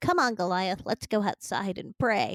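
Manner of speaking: acted cartoon child voice. Quoting the mother voicing a cartoon line: Davy voice from Davy and Goliath. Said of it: "she was Davy of Davy and Goliath".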